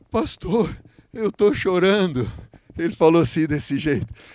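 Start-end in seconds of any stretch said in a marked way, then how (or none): 0.1-2.3 play-acted frail, enfeebled, weakened voice. A pastor retells what a healed man told him, imitating a weakened man.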